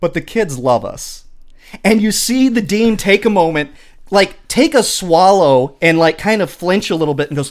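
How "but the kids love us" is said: dry delivery, pitched very low. Retelling a film scene where the dean confronts them: imitating Bill Murray's deadpan. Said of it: "Bill Murray just deadpans".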